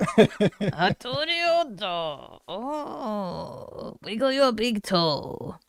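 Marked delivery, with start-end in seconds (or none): 0.0-2.4 put-on Japanese accent. Speaker admits every Japanese voice they try is a film quote: Japanese accent quoting Kill Bill. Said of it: "anytime I try to do a Japanese voice".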